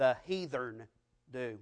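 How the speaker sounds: heathen pronounced with Southern accent. Recalling a schoolyard beating over a word, said with a Southern accent. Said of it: "here we go, the southern pronunciation of that word".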